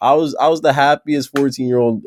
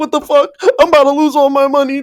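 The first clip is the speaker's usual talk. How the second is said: put-on tearful freak-out, very high, rapid, panicked; 13 semitones higher, 3 dB louder than usual. Retelling a browser crash mid-bet, imitating own past panic. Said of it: "I'm panicking. I'm crying. I'm like".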